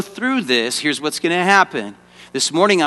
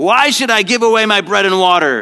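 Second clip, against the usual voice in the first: mean-spirited, nasty, loud outburst; 4 semitones higher, 4 dB louder than usual. Coaching another performer on how to say a shouted line, louder and nastier. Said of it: "you got to say it like louder and nastier".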